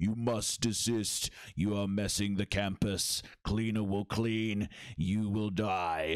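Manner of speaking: slow, deliberate, word-by-word giant machine voice. Game master voicing a huge mech that has just stood up, in a booming voice. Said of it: "you hear this booming voice that says".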